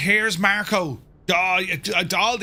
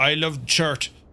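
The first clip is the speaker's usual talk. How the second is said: put-on Scandinavian, Nordic-accented delivery. Quoting a trucker who phoned about a shirt, Sven's Nordic accent. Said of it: "in a Nordic accent".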